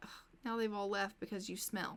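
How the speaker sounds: plain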